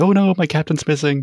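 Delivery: flustered, panicked, alarmed outburst. Showing how a panicked question about a missing captain would sound: mock panic. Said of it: "cautious about going panic".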